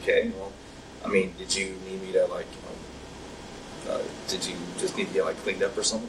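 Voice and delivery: ordinary talk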